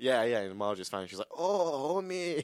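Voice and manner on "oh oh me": put-on Romanian-accented voice, pitched high. Describing a video online, voicing its dubbed woman: Marge in a Romanian accent. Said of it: "What's she, Romanian now?".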